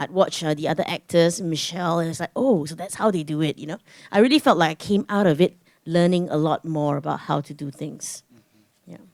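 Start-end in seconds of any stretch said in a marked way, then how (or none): none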